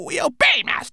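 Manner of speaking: very high, croaking raven voice. A narrator reads the raven answering its master before flying off; croaking raven voice. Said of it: "croaked the raven".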